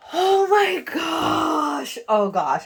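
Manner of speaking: thrilled, very high, swooping excited gush with laughing. Unboxing a nail polish and its display stand: excited, laughing.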